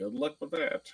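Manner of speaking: quiet under-breath mutter. Reacting to a comment about staying out of trouble, muttered under breath. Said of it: "under my breath, like as quietly as I can say it".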